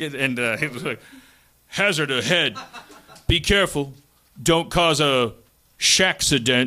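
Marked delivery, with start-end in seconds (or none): 1.7-6.7 put-on big-guy voice, navigation-announcer style. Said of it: "I don't know if I can do an impression of him. He's like a big guy".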